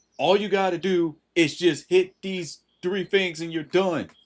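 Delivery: high-pitched, exasperated yelling. Retelling a TikTok where an adult yells at a ranting kid: imitating an adult yelling. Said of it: "the adult yelled at them saying".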